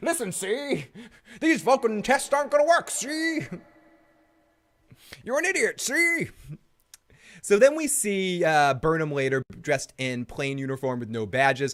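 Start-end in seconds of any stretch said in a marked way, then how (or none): 0.0-6.3 very high, assumed recurring put-on voice. Recapping an episode, voicing a character in a put-on voice. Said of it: "I don't know why I'm doing that voice a lot today".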